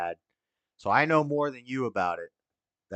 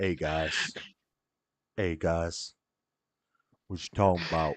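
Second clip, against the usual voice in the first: put-on laid-back voice, pitched way down, deep, relaxed; 7 semitones lower, 4 dB quieter than usual. Showing how they will greet the stream, much deeper, more relaxed voice. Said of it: "with a much deeper voice, much more relaxed".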